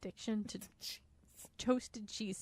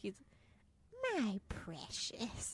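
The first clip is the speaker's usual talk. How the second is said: tentative, hissing put-on creature voice; 4 dB quieter than usual. Speaker tries a voice while reading a passage aloud, Smeagol voice. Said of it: "Are you trying to do Smeagol?".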